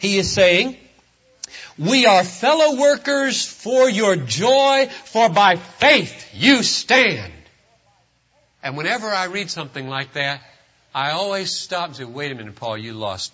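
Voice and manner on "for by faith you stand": the word "faith" strongly stressed. Reading a line from Paul aloud for its true connotation: stress on faith. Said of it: "So you read it like this for its true connotation".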